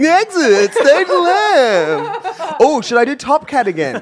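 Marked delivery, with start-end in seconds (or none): 0.0-2.5 drawn-out, hammy, exaggerated delivery. Imitating a cartoon character at a theme park: Snagglepuss voice. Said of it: "Snagglepuss would be like".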